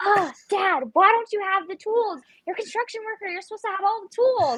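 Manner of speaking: very high, frantic, panicked yelling. Retelling asking dad for tools: imitating own panicked yelling. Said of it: "Why are you yelling at me?".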